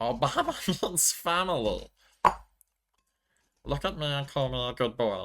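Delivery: high cartoon alien voice. A speaker practices a character voice between comments; Stitch voice. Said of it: "while I do his voice".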